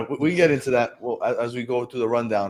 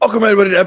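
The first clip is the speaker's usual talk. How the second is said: voice breaking partway, cracking and pitched up; 9 semitones higher, 9 dB louder than usual. Welcoming everybody to the podcast episode, voice cracking. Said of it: "my voice just went".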